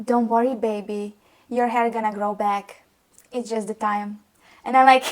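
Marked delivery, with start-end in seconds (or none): 0.0-4.2 put-on whisper. Recounting a man on the bus whispering in the speaker's ear, imitating a whisper. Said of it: "he was whispering on my ear like".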